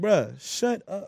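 mocking, dismissive tone spoken through laughter. Retelling laughing at a crying friend: retelling laughing at someone. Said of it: "laughing at him, like".

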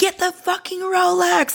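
put-on very high, shrill, stretched-out screaming. Telling a story, the speaker acts out the wife heard on the phone: imitating a screaming wife. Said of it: "And his wife is still screaming".

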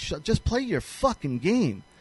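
ordinary delivery

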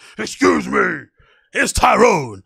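slow, loud, forceful, put-on intimidating voice. Retelling telling someone blocking people behind him to move: forceful, intimidating tone.

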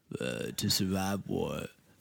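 put-on low, quiet, creaky growl with vocal fry.

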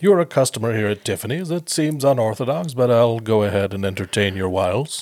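put-on courteous service tone, borderline sarcastic. Retelling a film clerk's reply to customers: imitating polite borderline sarcasm. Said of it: "borderline sarcasm, but he was, he was still genuine".

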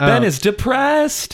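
deliberately bad, shrill, loud delivery. Quoting a TV character's line about Ben: bad Chris Traeger impression. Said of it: "I was also doing a bad impression".

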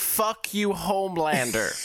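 acted-out screamed delivery. Recalling screaming in the Orlando crowd, retelling a scream. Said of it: "I literally screamed".

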